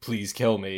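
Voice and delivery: weird monstrous horse voice. Retelling someone's suggested line for a horse creature, weird monstrous horse voice. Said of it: "in its like weird monstrous horse voice".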